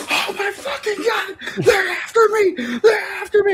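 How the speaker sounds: mock frantic, very high, panicky shrieking scream. Retelling how Grayson panics in a game fight: imitating Grayson screaming. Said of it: "he bounces and he screams".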